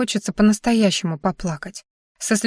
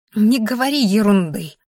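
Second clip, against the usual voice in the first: ordinary delivery, nothing marked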